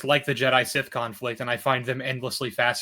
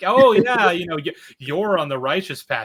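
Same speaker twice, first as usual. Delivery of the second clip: put-on sarcastic mockery, higher and louder; 5 semitones higher, 7 dB louder than usual. Retelling a book character mocking the officers who recruit him: imitating a sarcastic character. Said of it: "he's being really sarcastic".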